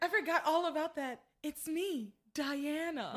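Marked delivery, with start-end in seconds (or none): 1.4-3.2 bad, clumsy put-on British accent. Quoting Princess Diana's appearance to Sheridan in a coma, in a bad British accent. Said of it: "With like this really bad British accent".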